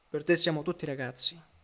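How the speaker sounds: plain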